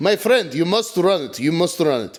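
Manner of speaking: put-on Russian accent. Joining a bit about being told to run the Denny's; put-on Russian accent. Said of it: "That was Russian".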